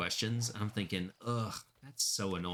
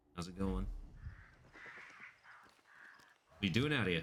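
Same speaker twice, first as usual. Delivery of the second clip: fast put-on Australian accent, police officer voice; 4 dB quieter than usual. Imagining a cop stopping him on a late-night walk, in an Aussie cop accent. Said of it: "It has an Aussie accent".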